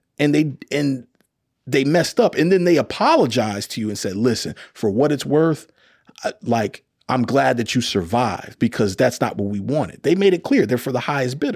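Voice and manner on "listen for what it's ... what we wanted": normal talking voice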